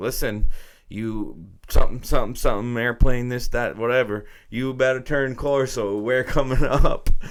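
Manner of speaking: mock pissed-off tone, loud and high-pitched. Retelling a radio controller's warning to a pilot: imitating an angry radio controller. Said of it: "you hear the guy getting more and more pissed".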